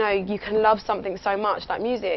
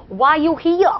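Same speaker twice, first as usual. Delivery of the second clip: put-on very loud, high-pitched New York accent; 7 semitones higher, 8 dB louder than usual. Recounting an airport security guard's question, in a New York accent. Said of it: "that's New York".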